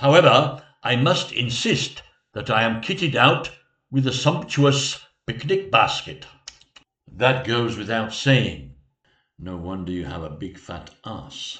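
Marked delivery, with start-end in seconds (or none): 9.4-11.6 muttered under breath, much quieter and lower. A character speaks aside while addressing his sire, muttering under breath. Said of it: "I wish you would stop mumbling under your breath".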